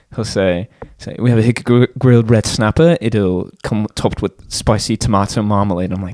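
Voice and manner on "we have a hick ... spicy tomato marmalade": put-on British accent. Retelling how a coworker announces the special: British accent. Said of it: "my British coworker will, he'll say the special".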